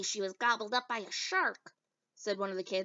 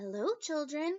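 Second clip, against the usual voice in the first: sugary sweet, high-pitched teacher voice; 7 semitones higher than usual. Reading a story aloud, Miss Nelson greeting the children, Miss Nelson's sweet voice. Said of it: "said in a sweet voice".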